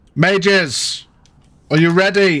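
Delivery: booming, high-pitched, loud carrying call. Sarazella walks up to the front and calls to the mages, booming out louder. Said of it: "her voice booms out louder".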